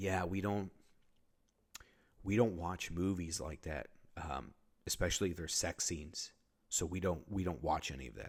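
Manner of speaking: solemn, very serious, grave, dead-serious tone. Retelling how the group leaders answered, imitating a very serious tone. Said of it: "They just go in a very serious tone".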